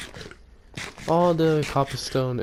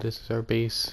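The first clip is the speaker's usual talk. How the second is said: ordinary talk, nothing marked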